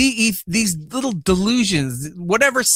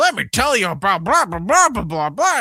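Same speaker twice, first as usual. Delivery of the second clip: mock halting, slurred, impaired-sounding speech. Describing a man who came back talking differently, the speaker imitates his stroke-like speech. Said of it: "He talks like a fucking stroke victim".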